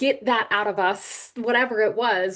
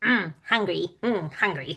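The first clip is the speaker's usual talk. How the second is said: low, goofy, silly little gremlin voice; 4 semitones lower, 3 dB quieter than usual. Retelling what a creature said to them, in a silly gremlin voice. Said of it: "this like really silly sounding voice".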